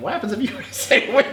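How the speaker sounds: high, laughing through the words. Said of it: "I can't even say it without laughing".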